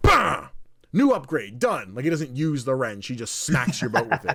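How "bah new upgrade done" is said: excited, loud, slow, swooping goofy voice, belted out. Showing the crocodile character picking up a wrench: excited Yeti voice. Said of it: "gets excited whenever he gets an upgrade".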